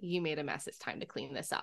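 very quiet, hushed, breathy whisper. Acting out a parent responding to a child's spill: imitating speaking very quietly. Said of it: "getting very quiet and being like".

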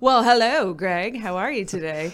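booming, very loud put-on British accent. A podcast co-host greets the other host, Greg, in a put-on British accent. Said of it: "Are we doing accents today?".

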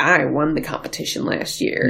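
ordinary talk

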